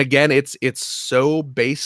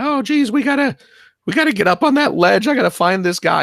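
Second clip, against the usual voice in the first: shrill, high-pitched yelling; 11 semitones higher, 4 dB louder than usual. Describing a video game character running around, yelling Morty impression. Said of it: "he's yelling like Morty, like".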